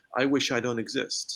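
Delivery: normal talking voice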